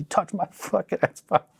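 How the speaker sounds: high-pitched mock scream. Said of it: "and I'm just screaming".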